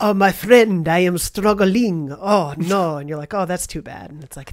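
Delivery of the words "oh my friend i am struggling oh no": loud, slow put-on French accent, drawn-out vowels. Recapping a game episode, voicing a character's line in a Lumiere-style accent. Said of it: "That accent was a little more Lumiere than Bebe".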